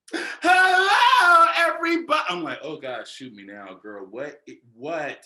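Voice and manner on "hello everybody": hyper, over-caffeinated perkiness, very high and loud. Telling a story, the speaker imitates a girl greeting the room, mimicking an overly peppy voice. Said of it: "How many Red Bulls did you have?".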